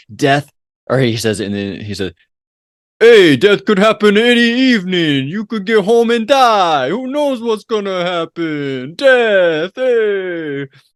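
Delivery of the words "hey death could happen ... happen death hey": put-on Bronx accent, very high and drawn out. Quoting a character's eulogy speech from a movie: imitating a character in a bronx accent. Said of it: "that was more of a Bronx accent you were doing".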